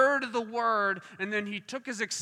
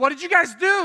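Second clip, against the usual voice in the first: mock frantic, panicked outburst, high and very loud; 8 semitones higher, 9 dB louder than usual. Retelling how a healed man reacted to the others: imitating someone freaking out. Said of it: "he starts freaking out".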